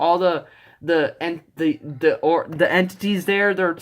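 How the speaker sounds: ordinary delivery, nothing marked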